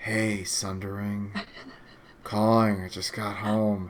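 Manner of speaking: very quiet, very low, hushed whisper. Retelling a caller's phone call at low volume: imitating a caller whispering. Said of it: "it sounded like he was whispering".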